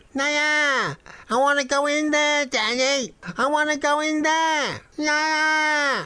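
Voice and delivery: put-on faint, tiny, very high-pitched squeaking child's voice. A child rattling at a shop door calls to his daddy, squeaking little voice. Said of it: "a squeaking little voice could be faintly heard".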